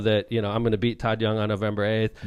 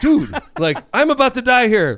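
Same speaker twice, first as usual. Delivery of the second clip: mock irritable, very high, very loud, drawn-out snap; 14 semitones higher, 8 dB louder than usual. Retelling snapping at someone taking a picture at the finish line: imitating own snapping. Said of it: "snapped at her".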